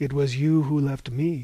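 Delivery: ordinary delivery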